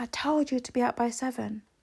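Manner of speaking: mock, petty, furious, angry and heated. Retelling a fight about being out by seven, the speaker is retelling his angry yell. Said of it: "he just lost it".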